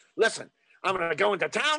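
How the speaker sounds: put-on New York accent. Quoting a favorite Kelly's Heroes moment: imitating Telly Savalas. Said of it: "him going".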